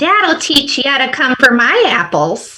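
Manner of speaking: put-on high-pitched nasal Midwest accent. Improv round with the accent high nasal midwest and the object apple, high nasal midwest accent. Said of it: "High nasal Midwest".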